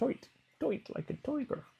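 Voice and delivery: very high-pitched put-on character-style voice. Quoting a line from Austin Powers: Goldmember impression. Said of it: "Is that your best impression?".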